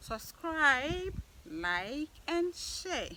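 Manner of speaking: high, slow mum voice. Asking viewers to subscribe, like and share, in Abner's mother's voice. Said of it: "I am saying this in Abner's mother's voice".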